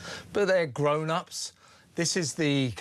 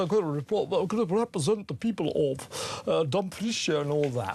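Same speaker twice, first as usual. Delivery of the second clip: put-on posh English young woman's voice. Speaker showing how a posh English girl now speaks, imitating Pilar Lara Bird Leakey's new accent. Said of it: "now speaks like this".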